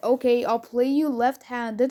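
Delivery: ordinary talk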